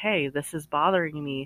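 ordinary delivery

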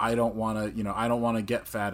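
plain

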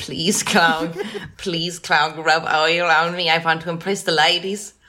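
acted-out pleading. Speaker retells what he said when pleading with Clog: retelling a plea. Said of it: "I pleaded with him".

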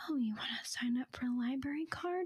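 soft whispery ASMR-style voice, put on. Retelling an ASMR video where the lady signs someone up: imitating Gentle Whispering ASMR voice. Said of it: "the Gentle Whispering lady was like".

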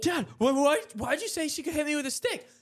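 mock-angry complaining. Retelling a fight, quoting their own complaint to their laughing dad, mock-angry. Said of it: "I'm mad".

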